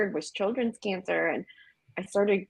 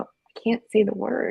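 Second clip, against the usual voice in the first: put-on tearful, crying voice. Retelling how she told her husband she couldn't say it: retelling own crying words. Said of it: "I'm, like, crying".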